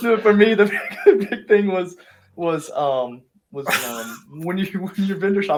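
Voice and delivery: laughing while talking. Answering what advice to give a former self, laughing while talking. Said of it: "I can't stop laughing at it".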